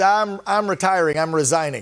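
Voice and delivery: ordinary talk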